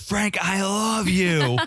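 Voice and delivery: acted, very high, very slow, drawn-out dramatic yell. Retelling a dramatic love confession to another speaker: imitating someone yelling. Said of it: "And he just yells it out".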